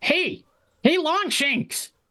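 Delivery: very high, squeaky goblin voice. Game master voicing a goblin calling out from a scrap wall: goblin voice. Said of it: "a greasy, dirty goblin".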